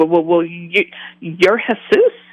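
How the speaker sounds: mock halting stammer with repeated words, rising pitch. Retelling answering the figure who asked if they knew him, retelling own stuttering. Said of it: "and I'm stuttering".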